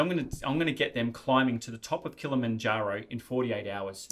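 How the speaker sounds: normal talking voice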